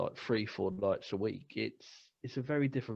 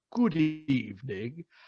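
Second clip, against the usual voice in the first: put-on Transylvanian-accented voice; 4 semitones higher, 6 dB louder than usual. Retelling greeting a couple in their sixties while jogging past, in a put-on Transylvanian voice. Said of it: "why did you put on a Transylvania voice".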